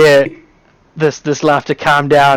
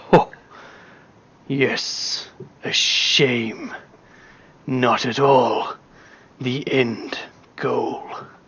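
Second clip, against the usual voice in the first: drawn-out, slow, breathy, mysterious laughing whisper; 3 semitones lower, 9 dB quieter than usual. Voicing a laughing hidden voice answering a player. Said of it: "You hear the laugh again".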